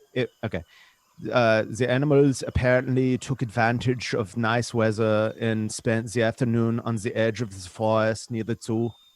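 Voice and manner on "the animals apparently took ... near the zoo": put-on German accent. Reading an English news story aloud in a put-on German accent. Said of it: "do you guys mind if I do it in a German accent?".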